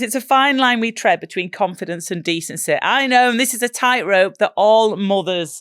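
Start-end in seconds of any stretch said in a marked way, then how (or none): none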